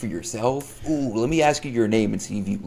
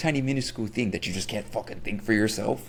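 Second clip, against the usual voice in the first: ordinary talk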